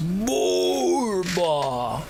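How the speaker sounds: croaking, hoarse troll creature voice. Narrator voices a caged troll from behind the bars, in a hoarse croak. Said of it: "A hoarse croak comes from behind the bars".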